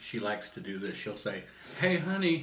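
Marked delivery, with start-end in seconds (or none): 1.8-2.4 loud, high yell. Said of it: "and, like, yell out".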